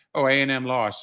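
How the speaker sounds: ordinary delivery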